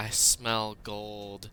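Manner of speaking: whispering creature voice. Retelling what a large creature on the roof said: imitating a creature's whisper. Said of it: "I guess it kind of whispered".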